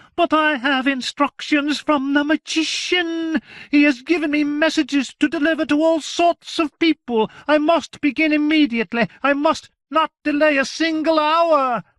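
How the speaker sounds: very high, shrill, eager, excited outburst. Narrating a character who cries out his reply, shrill, excited voice. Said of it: "In a shrill, excited voice he cried".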